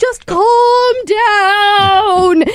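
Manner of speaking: high, very slow, drawn-out soothing pleading tone.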